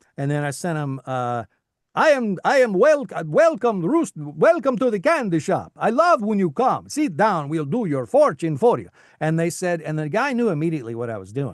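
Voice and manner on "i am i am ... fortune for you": put-on vampire accent, high and loud. Retelling a voice sample sent to a casting person, in a Count voice. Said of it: "love the Count voice".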